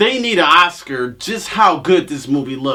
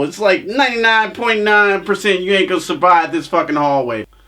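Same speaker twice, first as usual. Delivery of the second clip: ordinary talk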